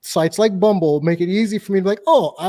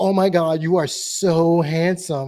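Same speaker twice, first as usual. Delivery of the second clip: put-on Californian Valley Girl accent. Quoting a girl who came up to him, speaker uses a Valley Girl accent. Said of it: "same accent that Sarah just did, the Valley Girl accent".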